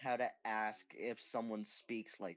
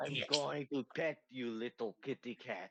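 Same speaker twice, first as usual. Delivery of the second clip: put-on Russian accent. Talking to a kitty cat while petting it, in a put-on Russian accent. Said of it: "I always talk to it with a fucking Russian accent".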